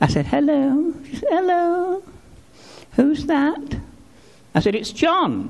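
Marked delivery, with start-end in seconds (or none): 1.3-3.8 tiny, small, high little voice. Retelling a phone call home, he voices his mother answering, small little voice. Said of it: "this little voice said".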